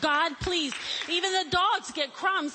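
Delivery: persistent, pleading, begging voice. Telling of a persistent woman who kept asking God, acting out begging. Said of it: "She kept begging".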